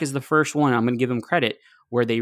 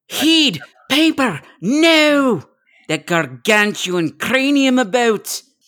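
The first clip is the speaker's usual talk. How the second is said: loud, high-pitched Scottish voice; 12 semitones higher, 6 dB louder than usual. Put on the spot, the speaker quotes a line in a Mike Myers Scottish accent. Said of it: "Who wants to do a Scottish accent?".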